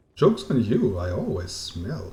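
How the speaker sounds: plain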